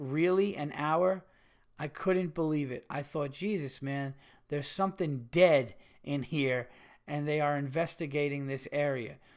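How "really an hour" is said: ordinary delivery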